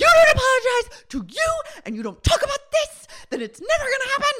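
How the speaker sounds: very high, loud screaming. Retelling what someone told two others to make them talk: imitating someone screaming. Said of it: "just screams at everyone".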